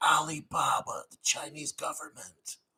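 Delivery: hushed whispered aside. Refusing to say a company's backer out loud: whispered. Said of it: "I'm not going to say it loud. I'm going to whisper it".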